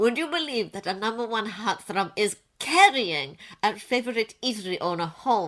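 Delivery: ordinary delivery, nothing marked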